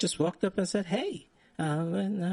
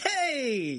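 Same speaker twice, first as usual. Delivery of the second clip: put-on, extra bright, sunny, drawn-out voice; 7 semitones higher than usual. Retelling how a passing guy greeted them: imitating an extra bright greeting. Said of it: "he got extra bright on me".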